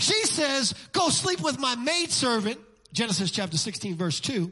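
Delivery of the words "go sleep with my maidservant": ordinary talk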